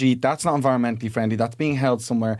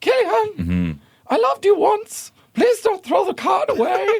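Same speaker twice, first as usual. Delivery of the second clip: put-on very high, sing-song voice with slight German accent. Acting out a voice pleading with Gillian, in a slight German accent. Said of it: "the slight German accent".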